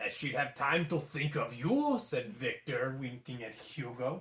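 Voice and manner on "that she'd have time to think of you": put-on French accent. Reading a story aloud, voicing a gargoyle: french accent. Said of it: "They all have the same accent".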